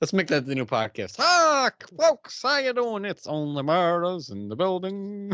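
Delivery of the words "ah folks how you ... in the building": put-on very slow old-timey drawl, pitched up. Speaker pretends someone born in the 1930s hosts the podcast; old Tommy voice. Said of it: "old Tommy voice".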